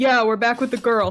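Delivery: dropped-register character voice. Mimicking a heard guard's voice through a doorway: lower-register put-on voice. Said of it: "drop into a lower register".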